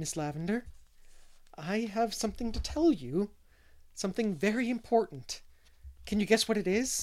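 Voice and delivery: high, excited voice trembling with nerves. Narrator reads Anne coming to Miss Lavendar in the garden: trembling with excitement. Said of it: "her voice trembled".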